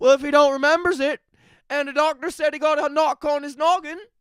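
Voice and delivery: put-on very high, clumsy Newfoundland accent. Quoting what the judge said about the defendant, in a bad Newfie accent. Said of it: "that's a pretty bad Newfie accent".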